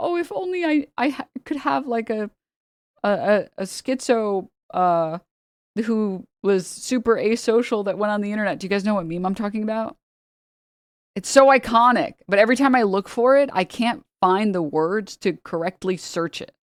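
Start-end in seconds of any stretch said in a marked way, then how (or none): 0.0-8.6 weepy, tearful, sobbing woman's voice. Describing a meme comic where a woman speaks: mock crying. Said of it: "and she's crying, and she's like".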